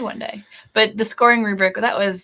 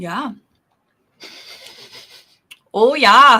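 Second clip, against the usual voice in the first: very loud put-on Canadian accent; 8 dB louder than usual. During a tasting, reacting to a sip; Canadian accent. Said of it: "good Canadian accent, eh?".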